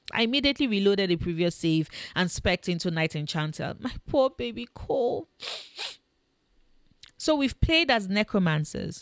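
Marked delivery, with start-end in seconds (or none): 3.8-5.2 mock-sad sniffling, much higher and slower. Player laments making a game companion sad, mock-sad sniffling.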